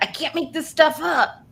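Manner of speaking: put-on New Jersey accent and inflection, pitched high. Showing how people from jersey talk: put-on new jersey accent. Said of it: "they talk like this".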